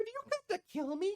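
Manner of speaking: very high, tiny, soft fairy-dragon voice. Voicing a small fairy dragon who greets a player: small fairy dragon voice. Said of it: "this fairyish small looking dragon".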